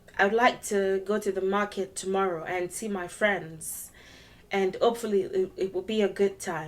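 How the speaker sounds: flat monotone, everything on one pitch level. Showing how a monotonous tone sounds: flat monotone pitch. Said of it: "my tone is so monotonous. I'm on one level".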